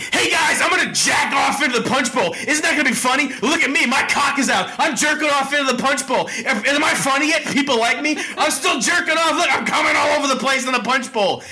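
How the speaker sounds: screaming, creepy-sounding.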